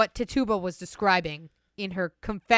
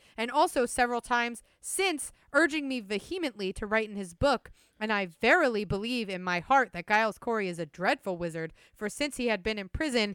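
normal talking voice

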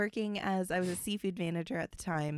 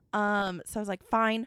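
ordinary talk

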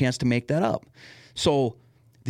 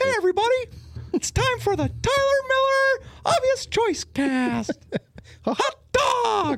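very high-pitched, squeaky cartoon mouse voice. Another speaker asks for it, so doing a Mickey voice impression. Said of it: "You want me to do my Mickey impression?".

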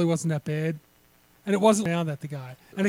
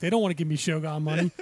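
ordinary talk

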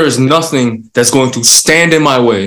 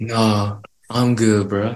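put-on stoned voice, lower and quieter; 4 semitones lower, 9 dB quieter than usual. Retelling friends' reply after hotboxing, imitating a stoned voice. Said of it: "I can't with the fucking eyes and voice".

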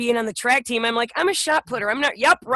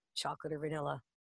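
put-on very quiet hushed mutter, much lower, quieter; 9 semitones lower, 20 dB quieter than usual. Recalling car rides with the family, the speaker quotes their dad: imitating dad's under-breath mutter. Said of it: "under his breath, really quietly".

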